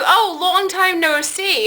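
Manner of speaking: put-on very thick Italian accent, laid on, slow. Retelling a counter man's greeting at Sbarro, in a thick Italian accent. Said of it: "in this very thick Italian accent".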